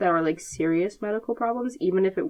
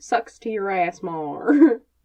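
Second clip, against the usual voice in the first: loud southern American accent; 2 semitones higher, 5 dB louder than usual. Quoting a line from a book the way their brain always says it: southern accent. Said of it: "say that like in a southern accent".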